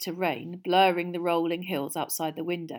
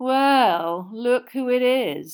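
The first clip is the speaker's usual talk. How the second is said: lazy, raised drawl, words dragged out; 6 semitones higher, 6 dB louder than usual. Reading aloud as Malfoy pulls open the compartment door: Malfoy's lazy drawl. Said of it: "said Malfoy in his usual lazy drawl".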